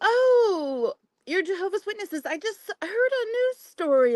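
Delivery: bright, chipper, eager, excited sing-song voice. Retelling greeting a lady at the door, imitating own chipper excited tone. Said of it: "I made it sound like I was really chipper and excited".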